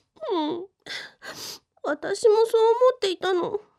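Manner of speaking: tearful voice. Answering a question about a Halloween party with the boyfriend, crying. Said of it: "いきなり泣かないでよ。".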